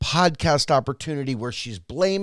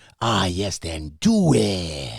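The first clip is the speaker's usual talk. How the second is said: put-on yoga instructor voice, lower; 7 semitones lower than usual. Imitating a film's yoga instructor: Couples Retreat yoga instructor voice. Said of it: "the yoga instructor from Couples Retreat".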